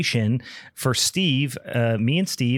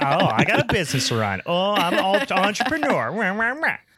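playful, high-pitched, teasing voice; 8 semitones higher than usual. Teasing a departing podcast co-host by imitating her: Meg impression. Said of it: "That's my Meg impression".

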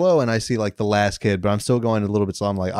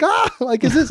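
mock yelling, pitched very high. Telling how a group of ladies reacted when the speaker went inside, retelling their yelling. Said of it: "a bunch of ladies like yelling".

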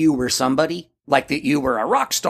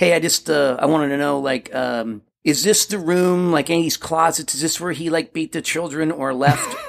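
usual speaking voice

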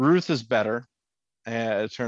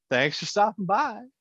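put-on high, dismissive Southern accent; 10 semitones higher than usual. Retelling how Wendy sends Miller off: imitating Wendy's dismissive Southern tone. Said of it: "the very dismissive, ... in a very Southern way".

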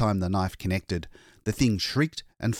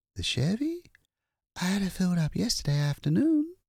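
bewildered, dazed, very high voice; 11 semitones higher than usual. Narrator reads a character's reply to a question about her car, dazed.

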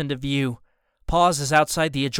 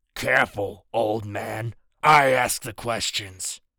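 scratchy, deep, low voice; 4 semitones lower than usual. Reading a story aloud, voicing Falcon in a scratchy, low voice. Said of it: "his voice scratchy and low".

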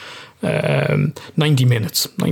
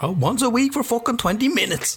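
very high-pitched put-on voice; 11 semitones higher, 4 dB quieter than usual. Quoting a sketch about how long dads piss for: Peter Kay impression. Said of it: "[name] did an impression of Peter Kay".

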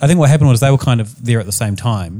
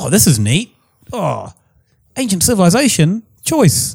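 put-on New Zealand accent, pitched up; 8 semitones higher than usual. Voicing what people think about the narrative, in a New Zealand accent. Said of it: "It's my New Zealand accent".

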